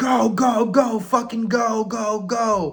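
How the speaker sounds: very slow, stretched-out, high drill yelling. Recalling getting off the bus as officers shout at recruits, imitating their yelling. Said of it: "immediately they're yelling at you".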